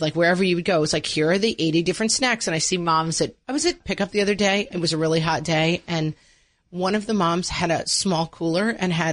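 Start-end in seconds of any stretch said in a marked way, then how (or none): none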